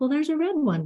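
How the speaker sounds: light playful voice. Demonstrating how to coax a child into picking up blocks: playful. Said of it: "trying to keep it playful".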